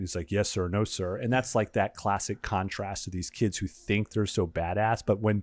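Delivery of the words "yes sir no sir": mock, exaggeratedly super polite tone. Retelling how a kid answers a security guard: imitating a super polite reply. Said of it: "super polite".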